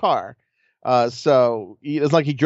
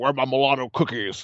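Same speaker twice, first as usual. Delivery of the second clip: put-on hushed, stammering, angry old-man voice; 2 semitones lower, 5 dB quieter than usual. Recounting a man coming in at night, imitating an angry old man. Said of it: "he always had this voice that sounded like an angry old man".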